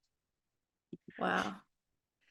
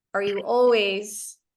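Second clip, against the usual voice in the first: ordinary talk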